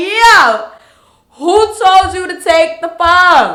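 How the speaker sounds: high, loud, drawn-out screaming outburst. Speaker retells screaming about a lady who took the phone, retelling own scream. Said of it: "And I am screaming like".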